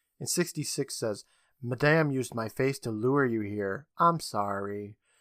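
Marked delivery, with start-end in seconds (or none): none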